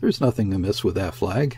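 ordinary delivery

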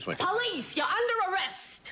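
very high New York Bronx, Brooklyn street accent. An actor demonstrates the accent he studied for a police scene, a Bronx, Brooklyn accent. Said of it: "I do a kind of Bronx, Brooklyn accent".

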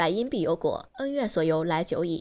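usual speaking voice

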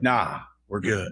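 smooth, soulful voice. Retelling a movie character's reply: imitating Keith David. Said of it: "nice, soulful voice".

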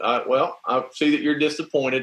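ordinary talk

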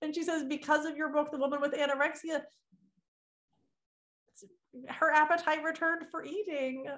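voice catching, choked up, close to crying. Relaying a message about the listener's books helping a woman, on the verge of tears. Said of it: "I'm going to cry".

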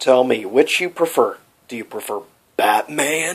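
ordinary delivery

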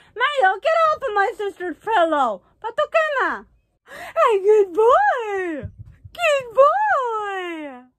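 slow, very high-pitched voice. Speaker addresses the dog directly, dog-talk voice. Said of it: "I have to talk like that".

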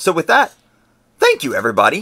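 voice breaks mid-line. Thanking everybody to close out the show, voice cracking. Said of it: "That was a weird inflection in my voice".

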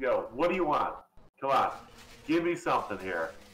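even-toned, calm yet urgent, desperate pleading. Recounting what a man says at this point in the story, retelling in a calm tone. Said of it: "He's very calm at this point".

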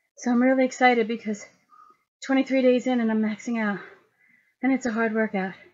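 heavy breathing. Talking right after finishing a hard workout: breathing heavily. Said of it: "I'm still breathing heavy".

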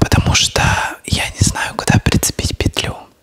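soft whisper with no voice at all. Talking to viewers at the start of her video, whispering. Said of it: "Я говорю шепотом".

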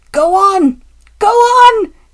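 very slow, loud, high, drawn-out screaming cry. A van squeezed between the engine and the trucks, screaming. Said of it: "it screamed".

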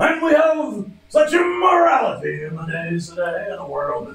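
put-on booming preacher voice. Speaker poses a discussion question to the group, in the preacher voice. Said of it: "I could make it the preacher voice".

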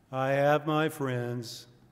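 put-on voice, very slow, every word drawn out. Reading a passage about Eeyore aloud: Eeyore voice. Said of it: "I'll try to do my Eeyore voice".

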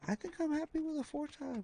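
voice jumps up high. Player picking a scope in a game, voice jumps up high. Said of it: "my voice went up high like that".

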